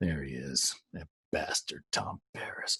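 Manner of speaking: very low, hushed aside. Retelling what a man said to him as someone walked in, in a very low voice. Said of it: "in a very low voice to me".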